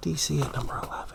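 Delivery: low, unvoiced, very quiet whisper.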